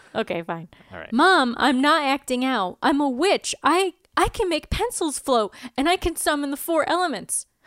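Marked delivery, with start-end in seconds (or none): 1.1-7.4 upset, slow, drawn-out, high-pitched voice. Acting as Willow, speaking to Mom, upset about being grounded. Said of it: "Willow is upset that she's grounded".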